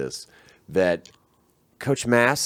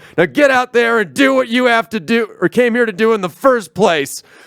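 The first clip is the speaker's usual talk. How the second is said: very high, loud coach-style yell; 13 semitones higher, 7 dB louder than usual. Retelling a coach's locker-room speech to a losing team: imitating a coach yelling. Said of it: "He yells".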